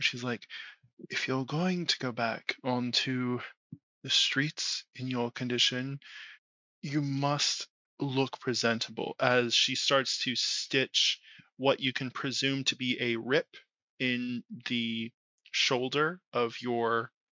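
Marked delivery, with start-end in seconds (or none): 1.1-9.1 close, private-sounding stage aside, meant to be overheard. Voicing a woman who tells a player to look presentable: hushed tone. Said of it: "it's a hushed tone".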